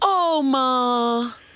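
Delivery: put-on high sing-song whining, Ma stretched long. Imitating a friend calling his mom, imitating someone whining. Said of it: "he was whining like".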